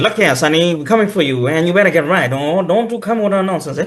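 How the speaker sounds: 1950s movie voice drifting into an Indian accent. Showing how people sounded in those old films: 1950s movie voice. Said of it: "those nineteen fifties movies".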